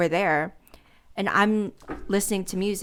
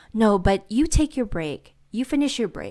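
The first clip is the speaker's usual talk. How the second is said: mock, dripping, exaggerated sarcasm in swooping sing-song; 3 dB louder than usual. Retelling what the boss said about taking a break: imitating boss's sarcastic tone. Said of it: "are you being sarcastic?".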